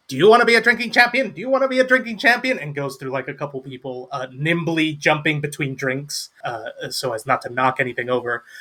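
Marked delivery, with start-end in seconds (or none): 0.2-2.6 high, rattled-off, calling gnome voice. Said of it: "just going like".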